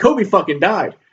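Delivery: put-on, sudden blurted outburst at half strength. Retelling an outburst in a movie theater with kids around, retelling saying it loud. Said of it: "I think I just say loud".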